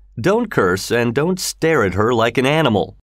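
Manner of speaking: ordinary delivery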